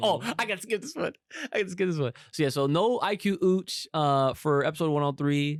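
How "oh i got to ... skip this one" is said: excitement bursting through every word, thrilled. Mimicking someone's reaction to getting to skip an episode: imitating an excited voice. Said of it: "You heard the excitement in his fucking voice".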